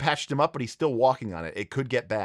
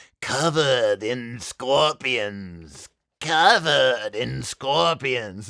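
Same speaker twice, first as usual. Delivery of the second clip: villainous whisper, close to the ear; 4 dB louder than usual. Describing a game scene where the villain whispers to the player, whispering as the villain. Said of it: "he he whispers into his ear".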